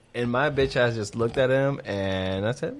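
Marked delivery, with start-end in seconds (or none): none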